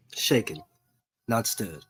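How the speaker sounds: put-on hushed, breathy secret-agent accent. Repeating a famous line from the spy movies: James Bond accent. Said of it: "you got the accent down".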